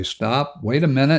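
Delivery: plain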